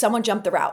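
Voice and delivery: ordinary talk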